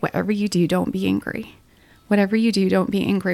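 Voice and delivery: ordinary talk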